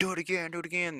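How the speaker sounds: high, eager, egging-on voice.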